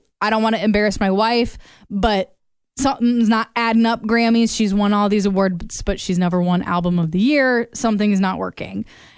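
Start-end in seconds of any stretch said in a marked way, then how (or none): none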